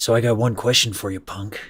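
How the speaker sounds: stiff-jawed tough-guy voice, jaw held still. Replaying a bit done earlier, a Clint Eastwood impression. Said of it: "Like when I did the Clint Eastwood one ... look at how my jaw like just doesn't move".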